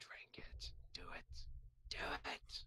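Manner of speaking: very soft, breathy whisper. Narrating what a player hears inside their head: L-Tab whispering in your head. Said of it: "You hear the whispering of L-Tab".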